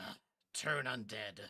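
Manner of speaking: speaking in a whisper. In character, turning to an ally mid-fight and telling her: whispering. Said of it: "I whisper to her".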